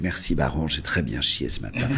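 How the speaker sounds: low, soft, courteous and polite tone.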